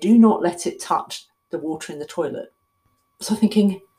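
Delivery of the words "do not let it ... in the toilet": ordinary talk, nothing marked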